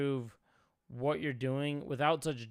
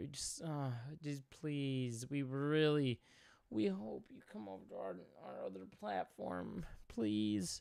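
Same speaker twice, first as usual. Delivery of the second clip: mock desperate pleading tone, quieter; 2 semitones higher, 7 dB quieter than usual. Mocking a video's request to follow them: imitating desperate pleading. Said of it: "You sound so desperate".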